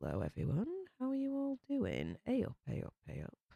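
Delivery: ASMR-style speaking voice. Showing what their ASMR sounds like when asked: ASMR voice. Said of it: "I speak like this and go".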